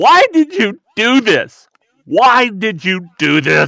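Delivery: booming, shrill, drawn-out angry yelling. Recounting yelling at a picture of her after her death, retelling yelling at a picture. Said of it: "I just started yelling at this picture".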